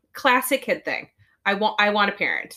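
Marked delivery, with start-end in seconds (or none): none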